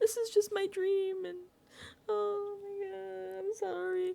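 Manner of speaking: mock blubbering, very high, weepy crying voice. Retelling how he told Will he was nervous to go on the block, imitating someone crying. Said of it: "Why are you crying to me?".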